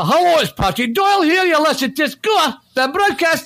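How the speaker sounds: put-on Edinburgh accent. Recording a podcast intro again, offering a different take: Edinburgh accent. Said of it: "I can have it, Edinburgh".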